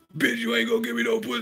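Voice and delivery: shrill shouting, pitched very high. Imitating an actor yelling in a romantic comedy: imitating Denzel Washington yelling. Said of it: "How you gonna yell at the bitch like that?".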